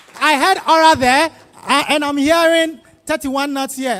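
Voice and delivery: loud, high-pitched, energetic hype-style shout.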